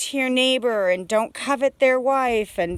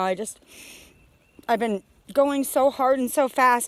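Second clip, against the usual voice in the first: overwhelmed, emotional, overcome voice. Apologizing mid-talk for being overwhelmed: emotional. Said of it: "I'm super emotional right now".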